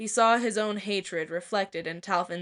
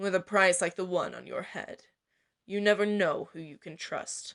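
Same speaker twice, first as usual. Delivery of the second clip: sly, calculating, measured taunting tone; 3 dB quieter than usual. Narrating, the imprisoned assassin baits Cedric: sly, calculating baiting. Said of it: "A voice in the back of his head told him that the assassin was baiting him, / The sly look in [name]'s cold gray eyes, the calculating measure of his voice, / Even as he watched the man's smirk grow".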